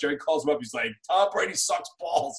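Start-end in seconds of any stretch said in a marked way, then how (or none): 1.1-2.4 put-on angry voice with New York accent. Retelling a phone call where a fan speaks of Tom Brady: imitating angry New York fan. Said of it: "your most freaking New York angry Giants fan".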